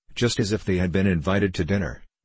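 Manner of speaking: ordinary delivery, nothing marked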